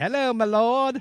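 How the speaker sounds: very high, loud, botched fake English accent. Joking about an actor needing an accent for a role, play Ben Affleck attempting an English accent. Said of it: "I need an English accent".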